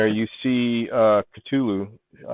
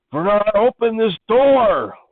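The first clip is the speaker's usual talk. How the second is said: shouting, higher and louder; 11 semitones higher, 5 dB louder than usual. Voicing an NPC banging on a hatch: screaming. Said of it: "she starts to start screaming".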